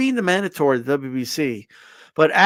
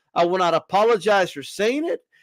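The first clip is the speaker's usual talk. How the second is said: ordinary talk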